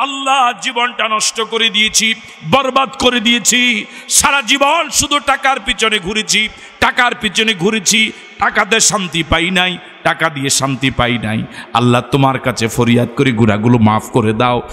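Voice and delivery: normal talking voice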